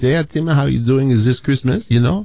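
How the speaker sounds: second-language French Canadian English. Speaker imitates his French-speaking general manager at a Christmas dinner, French Canadian accent. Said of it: "so he talked like this".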